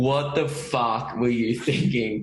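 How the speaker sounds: imitated laughter while talking. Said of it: "I just start howling laughing".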